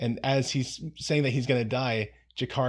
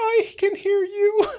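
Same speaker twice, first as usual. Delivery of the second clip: tiny, piercing, very high, loud squeaky voice; 8 dB louder than usual. Retelling a scene where Londo yells and Jakar answers, in a tiny voice. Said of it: "in a tiny voice goes".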